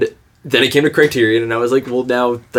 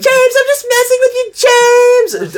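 put-on 1800s orphan boy voice, higher; 4 dB louder than usual. Imitating Mia Goth in a movie: Mia Goth impression. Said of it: "sounds like an eighteen hundreds orphan boy".

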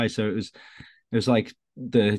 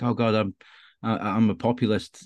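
very slow, drawn-out, mock creeping panic. Student recalling being asked his favourite film in class: retelling own panic. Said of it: "I was really panicking".

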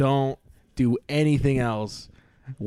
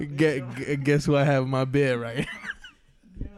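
ordinary talk, nothing marked

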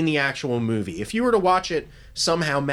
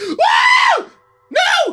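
piercing shriek, very high and loud; 9 dB louder than usual. Speaker describing a case acts out a woman screaming: retelling a scream of no. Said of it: "it was still screaming no".

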